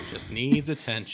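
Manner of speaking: ordinary talk, nothing marked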